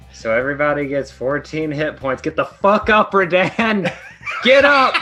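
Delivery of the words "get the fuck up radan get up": screaming, shouting character voice. Screaming at a fallen companion on the ground to get up: screaming in character. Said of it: "I'm just screaming at him on the ground".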